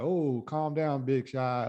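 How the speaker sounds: slow, play-acted dismissive, sarcastic drawl. Retelling how Penguin answers Batman's interrogation: imitating Penguin being sarcastic. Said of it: "kinda like he's being sarcastic with it".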